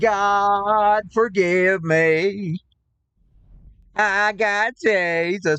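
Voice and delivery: put-on pleading prayer tone, parody style. Acting out someone at the altar: mocking imitation of a churchgoer. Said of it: "I'm not mocking Christians".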